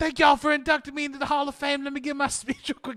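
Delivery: goofy voice, high-pitched and rattled off fast.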